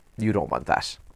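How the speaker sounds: ordinary talk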